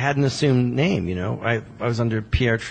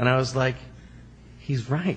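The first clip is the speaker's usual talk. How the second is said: ordinary delivery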